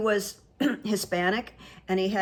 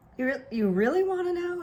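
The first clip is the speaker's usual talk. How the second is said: put-on pleasant, friendly, joking tone, very high pitch; 10 semitones higher than usual. Retelling a talk with a curious man about her work, retelling pleasantly and humorously. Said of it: "in a very pleasant, humorous way".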